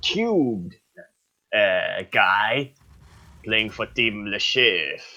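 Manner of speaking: kind of a put-on French accent. Doing a character voice while describing a player in a game broadcast to viewers. French accent. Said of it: "kind of a French accent for Le Chef".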